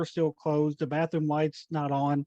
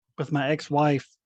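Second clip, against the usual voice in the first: normal talking voice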